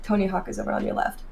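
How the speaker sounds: put-on whispering. Retelling how a man at a bar leaned close to tell him something, retelling a whisper. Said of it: "he's whispering".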